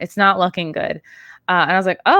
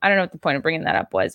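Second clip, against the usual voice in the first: plain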